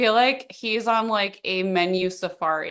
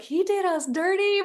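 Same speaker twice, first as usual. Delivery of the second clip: put-on cute little Southern accent, high and slow; 11 semitones higher than usual. Retelling a mother's complaint about a wine bill: cute little southern accent.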